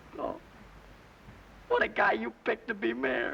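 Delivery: crying while speaking. The newly picked mayor breaks off his speech about Boys Town, sobbing.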